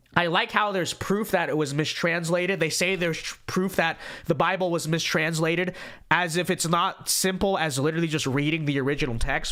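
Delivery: ordinary delivery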